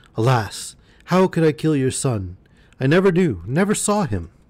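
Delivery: frightened, shaking, quavering voice. The merchant answers the threatening genie; trembling.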